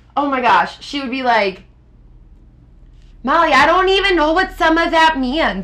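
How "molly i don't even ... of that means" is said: high-pitched put-on Minnesota accent. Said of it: "a really disgusting Minnesota accent when I do some stuff with my mom".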